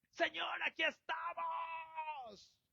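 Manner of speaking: very high, shrill, fervent shout. Showing how people shout their prayers: imitating shouted prayer. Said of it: "si levanto mi voz en oración gritando".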